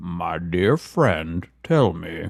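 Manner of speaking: very deep, slow delivery. Insisting after being told the impression is bad: Morgan Freeman voice. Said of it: "You do not do a good Morgan Freeman".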